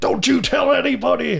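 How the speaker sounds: acted frantic, menacing outburst, very high and rough. Retelling a movie scene where the cook threatens a kid: imitating a threatening outburst. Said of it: "he's just freaking out".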